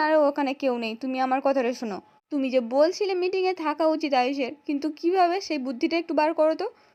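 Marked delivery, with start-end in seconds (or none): none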